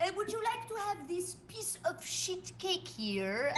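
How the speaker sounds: fake French accent, soft and high. Saying the cake offer in French to make it sound better, fake French accent. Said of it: "we're saying it with a French accent".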